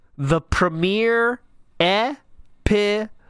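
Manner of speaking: deliberate, very slow, drawn-out, word-by-word delivery. Talking about the premiere episode of Project seven, very slow. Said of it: "I'm going to say this very slowly".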